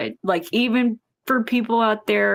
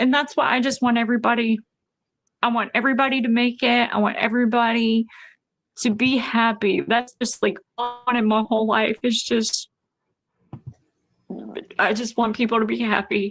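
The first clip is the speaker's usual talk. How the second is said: words coming through tears, crying while talking. Talking about wanting everybody to be happy, crying while talking. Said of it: "I told you I was gonna try to not cry".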